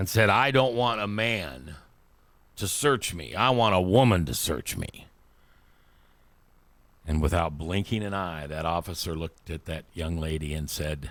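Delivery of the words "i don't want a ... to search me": put-on straight-faced, dead-serious sarcastic tone. Telling of a woman protester being arrested, retelling a sarcastic demand. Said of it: "she turned around very sarcastically, very seriously".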